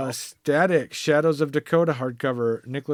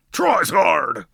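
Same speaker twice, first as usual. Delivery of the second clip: pro-wrestler announcing voice, louder; 4 semitones higher, 5 dB louder than usual. Urging a co-host to read a comic title, the speaker demonstrates in wrestler voice. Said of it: "in your best wrestler voice".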